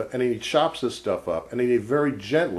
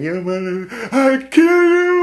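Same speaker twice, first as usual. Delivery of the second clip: very high, slow, drawn-out scream; 9 dB louder than usual. Retelling a story, the speaker imitates a man with a hatchet screaming. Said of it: "he starts screaming".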